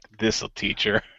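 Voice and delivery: quiet whisper. Joking about a co-host setting a bomb: imagined whisper. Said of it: "he just whispered, he's like".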